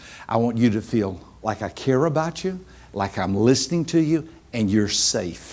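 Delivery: slow, soft, hushed, soft-spoken delivery. Showing how speaking to reserved listeners sounds: slower and softer. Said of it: "I slow it down and I talk softer".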